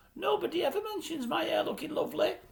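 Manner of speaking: daft, dopey, stupid, silly put-on voice, high and soft. Retelling what a man said in a kitchen scene, in a stupid voice. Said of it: "he says in a stupid voice".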